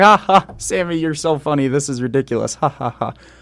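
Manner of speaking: put-on laughing voice. Retelling how Bobby laughed off the bully stuff: imitating Bobby Lashley laughing it off. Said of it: "He's in there laughing like".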